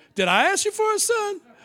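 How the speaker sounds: woman's voice from Cleveland. Acting out the woman confronting the prophet: voice of a woman from Cleveland. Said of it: "this does sound like a woman from Cleveland".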